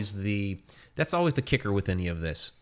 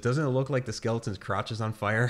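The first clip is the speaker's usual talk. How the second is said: ordinary talk, nothing marked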